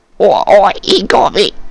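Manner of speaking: very high, slow, sputtering, stammering goblin voice. Voicing a skewered goblin looking down in shock: sputtering, stammering goblin. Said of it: "this goblin kinda sputters and stammers".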